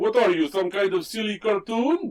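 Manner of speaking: put-on Russian accent. Retelling a scene, voicing the one who laughs at Spider-Ham: fake Russian accent as Scorpion. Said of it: "Why did he give him a Russian accent?".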